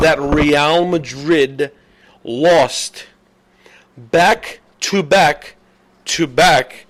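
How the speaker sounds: very slow, drawn out, halting with mid-phrase pauses. Checking whether you guys are understanding, saying it really slowly. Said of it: "I'm going to say this really slow".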